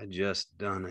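weary, worn-out, soft, tired voice. Narrator voicing George answering Carlson, said tiredly. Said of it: "George said tiredly".

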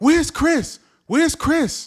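shrill, very high, loud scream. Outside a club, retelling how Chris's girlfriend screamed at the speaker, imitating someone screaming. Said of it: "she's screaming at me".

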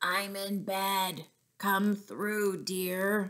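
rough, gruff, slow voice. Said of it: "said a rather gruff voice".

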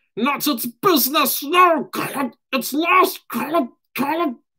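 very high, shrieking wail. Narrator reads Gollum refusing Bilbo's question about what he lost, shrieking as Gollum. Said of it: "shrieked Gollum".

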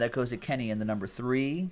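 ordinary talk, nothing marked

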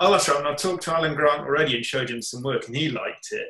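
ordinary talk

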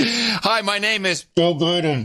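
mimicked edited-sounding speech. Mocking an edited clip's cadence: mimicking choppy spliced-in cadence. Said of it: "It's completely different cadence".

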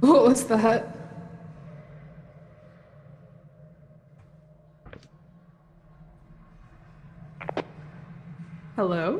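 fearful, frightened, scared. Exploring in a game after hearing something, sounding scared. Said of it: "I'm scared".

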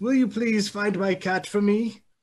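put-on high, elderly old woman character voice. A game master voices an elderly apothecary asking the adventurers for help: elderly woman voice. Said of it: "You four together have been brought to an elderly woman in town. She's an apothecary".

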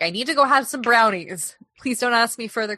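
mock panicked voice. Imagining a teacher's words about going to her office: imitating a panicked teacher. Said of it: "'Cause she was, like, panicked".

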